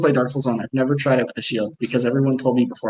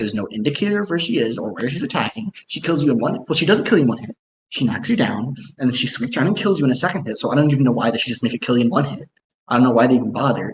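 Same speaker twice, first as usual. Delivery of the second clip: plain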